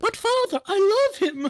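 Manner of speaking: shrill, very high soprano cry. Retelling how the speaker's dad yelled a movie line; imitating dad's high soprano yell. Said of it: "my dad yells in this high, like high soprano voice".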